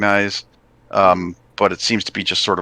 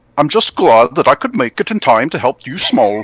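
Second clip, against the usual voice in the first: put-on Swedish accent, higher and louder; 5 semitones higher, 4 dB louder than usual. Voicing a giant who greets the small folk: Swedish accent. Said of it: "He's Swedish!".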